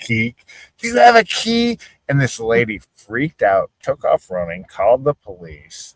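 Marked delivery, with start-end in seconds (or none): 0.8-1.8 put-on very high, shrill shouting. Retelling how a man yelled at a lady: imitating someone yelling. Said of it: "He's yelling".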